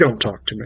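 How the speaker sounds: hushed, menacing, threatening voice. Retelling a man's reply after the speaker greeted him: imitating a menacing, scary voice. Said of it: "this sort of more menacing, scary voice".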